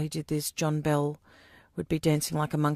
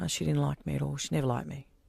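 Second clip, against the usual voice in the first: plain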